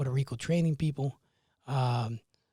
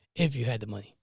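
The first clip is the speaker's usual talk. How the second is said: put-on mutter under breath, lower; 3 semitones lower than usual. Retelling what one of the owners said: imitating a mutter under breath. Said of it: "under his breath".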